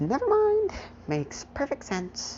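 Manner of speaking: put-on high-pitched old woman voice. Retelling what a grandmother said about Midoriya's punch, in an old lady impression. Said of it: "I can actually do a pretty good old lady impression".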